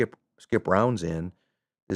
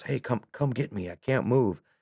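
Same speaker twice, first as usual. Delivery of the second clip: put-on soldier voice, yelling; 3 semitones higher, 6 dB quieter than usual. Retelling a combat scene where a wounded soldier calls out: imitating a soldier yelling. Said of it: "he yells".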